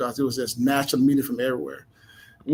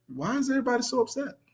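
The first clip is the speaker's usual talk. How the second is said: put-on calm voice, higher and quieter; 11 semitones higher, 6 dB quieter than usual. Retelling a teammate's words after the other team scored: imitating Charlie Ward's calm voice. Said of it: "with this calm voice".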